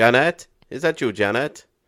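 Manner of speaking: fake Welsh accent, loud and high-pitched. Recalling childhood prank calls, doing the voice they used: put-on Welsh accent. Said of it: "we used to use a Welsh accent".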